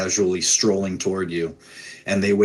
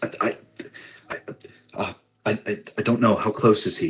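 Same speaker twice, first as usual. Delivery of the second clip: shocked, stammering voice. Narrating a story, voicing a character's reply, stammering in shock. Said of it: "and he stammers".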